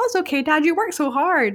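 mock carefree, blankly happy childlike cheerfulness. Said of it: "the kid's just so blankly happy".

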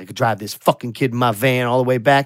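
mock grumbling, griping tone. Retelling the drive back in the van: imitating someone grumbling. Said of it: "he's grumbling the entire way".

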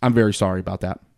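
mock blank, dead-flat, very low and quick. Retelling a woman's apology as she let the speaker through, imitating a flat, plain delivery. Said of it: "so plain".

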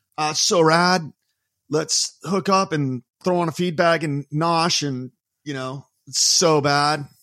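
put-on Southern California accent. Recalling how everyone talked growing up, the speaker does a put-on Southern California accent. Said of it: "Maybe not with that accent".

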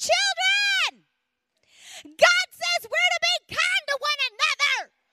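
shrill, high, drawn-out scream at top of lungs. Retelling yelling at kids fighting in the back seat: imitating screaming at top of lungs. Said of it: "I just screamed at the top of my lungs".

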